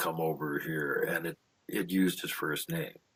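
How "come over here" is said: put-on deep nasty voice, lower, slower. Telling a story, voicing what called out from the thicket, imitating a deep, nasty voice. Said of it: "this really deep, nasty voice say".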